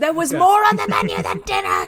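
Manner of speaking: put-on shout, loud, high-pitched and swooping. Acting out a woman's line in a comic retelling: imitating someone yelling. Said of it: "She's just yelling at him as he goes out the door".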